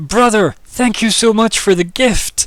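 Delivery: piercing high, shrill, full-blast scream. Narrating a scene as the doors fly open again: screaming woman's voice. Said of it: "you just hear a female voice scream".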